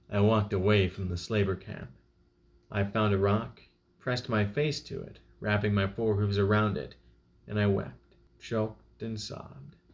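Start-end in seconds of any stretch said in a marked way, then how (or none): none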